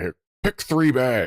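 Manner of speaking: mock annoyed, begrudging, angry, grumpy grumble. Retelling how an always-angry guy handed out bread: imitating an angry man. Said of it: "he'd still be angry about it".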